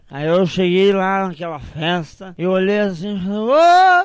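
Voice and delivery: put-on drunk voice. Telling a joke about a drunk sent to a birthday party, fake drunk voice. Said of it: "Faz a voz de bêbado".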